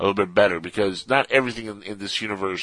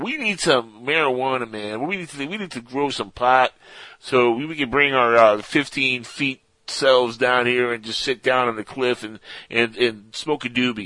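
put-on higher, laid-back stoner surfer-dude voice. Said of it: "Maybe not with that exact surfer voice".

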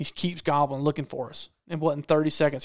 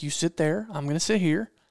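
ordinary talk

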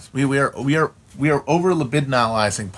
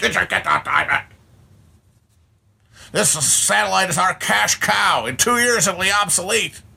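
all-out, high-pitched screaming rant; 6 semitones higher than usual. Recounting a scene, retelling Joe Don Baker screaming. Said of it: "screaming about".

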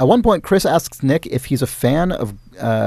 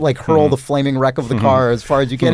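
ordinary talk

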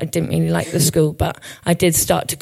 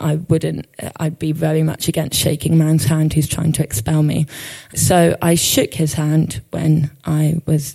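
plain

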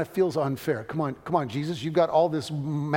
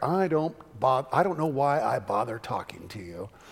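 put-on mutter under breath, lower and slower; 3 semitones lower than usual. Retelling what a woman said in reply to the speaker; imitating someone muttering. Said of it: "say under her breath".

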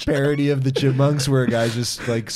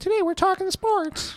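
very high, slow silly voice. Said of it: "I went high just to, like, be different".

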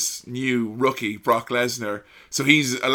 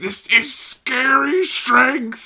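quivering, very high, slow, drawn-out delivery; 13 semitones higher, 4 dB louder than usual. Recalling a commentator's call of a brutal powerbomb, imitating Jim Ross's quivering voice. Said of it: "with his voice quivering".

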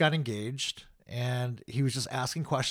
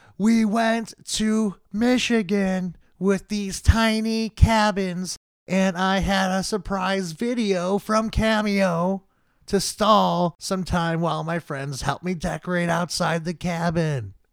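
loud yelling, slow and raised; 7 semitones higher, 8 dB louder than usual. Retelling shouting an answer to a comedian on stage: retelling a yell. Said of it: "I just start yelling louder".

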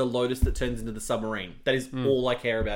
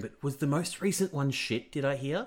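hushed, voiceless half-whisper; 8 dB quieter than usual. Talking about Bond films with another person, noticing they're half-whispering: half-whispering. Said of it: "I don't know why I'm whispering".

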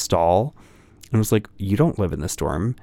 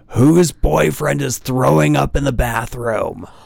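put-on hollered yell, rough and creaky; 4 semitones higher, 4 dB louder than usual. Recalling a guy yelling down the hall, imitating him screaming. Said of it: "he just screamed".

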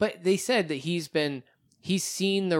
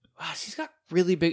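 imitated whisper; 4 dB quieter than usual. Retelling what a friend said to the speaker: imitating a whisper. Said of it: "she whispered this to me".

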